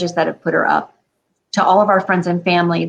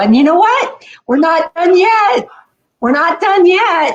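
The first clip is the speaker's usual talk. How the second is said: put-on, very high, gushing, excited, swooping enthusiasm; 12 semitones higher, 5 dB louder than usual. Quoting how she would react, imitating her most enthusiastic voice. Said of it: "with the most enthusiastic voice".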